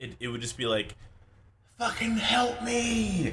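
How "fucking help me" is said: very high scream, sounding miles away. Retelling a teammate's voice chat, imitating distant faraway screaming. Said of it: "sounded like this man was screaming in a distant".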